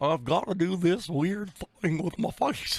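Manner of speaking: put-on, high-pitched cartoon dog voice. Showing how doing an impression needs a face: Goofy voice. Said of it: "Goofy, for example".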